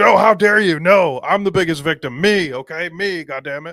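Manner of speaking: mock outraged, loud, deliberate indignation. Mocking someone who claims to be the bigger victim: imitating his indignation mockingly. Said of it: "where he's like".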